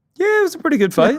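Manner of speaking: voice jumping sharply to very high pitch. Agreeing that the fight was a great one: voice going high. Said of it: "Your voice went so high there".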